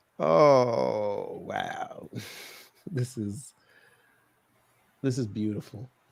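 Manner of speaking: tickled, gleeful, delighted tone, relishing it. Talking to your audience, reacting to what you just found: gleeful. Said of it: "hear the the glee in my voice".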